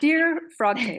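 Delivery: high, slow, mock gushing adoring voice.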